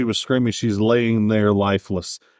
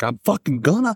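a little loud, raised pitch, insistent burst; 6 semitones higher than usual. Retelling a character refusing to back down: Philip getting a little loud. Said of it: "And he gets a little loud".

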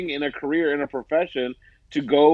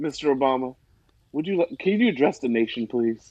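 put-on polite pleading tone. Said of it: "say what you said again".

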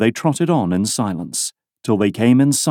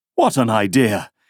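plain reading voice

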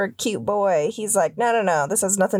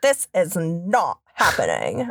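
put-on '80s Valley Girl voice; 3 semitones lower than usual. Riffing with co-hosts, re-voicing a quote in an '80s Valley Girl voice. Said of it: "Valley Girl voice".

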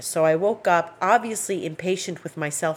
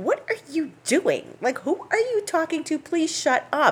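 very high, indignant meowing cat-like whine; 11 semitones higher than usual. Retelling how the cat meows when talked to: imitating an indignant cat. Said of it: "it's like this in-, indignant meow".

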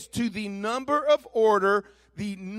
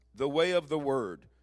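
ordinary talk

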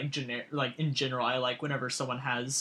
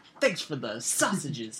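put-on very thick, laid-on New York accent. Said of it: "He's that very New York accent".

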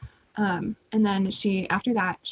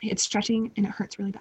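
normal talking voice

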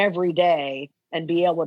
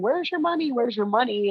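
repeated high screaming; 6 semitones higher than usual. Retelling waking up in an alley to a man: imitating a man screaming.

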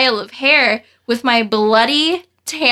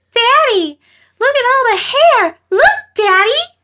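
put-on very high, excited, squealing little-girl yell; 12 semitones higher, 4 dB louder than usual. Speaker retelling a little girl calling to her dad in the van, imitating a little girl yelling. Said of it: "You made the voice!".

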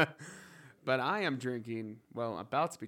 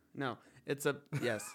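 ordinary talk, nothing marked

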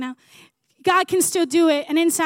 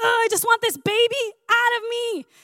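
put-on fed-up, mad, pitched-up grumbling; 7 semitones higher than usual. Retelling a pregnant friend at forty weeks: imitating a mad friend complaining. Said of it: "she was so mad".

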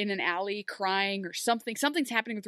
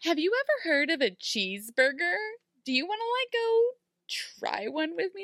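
high, sing-song, infantile voice with upward swoop; 8 semitones higher than usual. Mocking Belle asking someone on a date: infantile Belle imitation. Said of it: "In the most infantile way possible".

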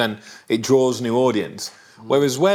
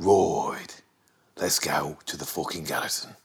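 very low, hushed voice with a Birmingham accent; 9 semitones lower, 7 dB quieter than usual. Show the others a regional Birmingham accent with an Arthur from Peaky Blinders impression. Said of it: "That's Arthur from Peaky Blinders".

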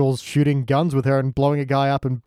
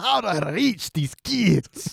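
put-on slow high-pitched Scottish accent; 5 semitones higher, 3 dB quieter than usual. Quoting a line after another speaker fails at a Scottish accent: Groundskeeper Willie Scottish accent. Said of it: "I can't do a Scottish accent".

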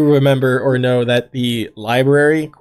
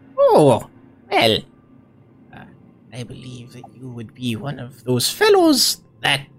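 put-on swooping elderly old woman voice; 3 dB quieter than usual. Narrator voices an older woman greeting newcomers as they enter, in an old woman voice. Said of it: "my old person voice just automatically ejected".

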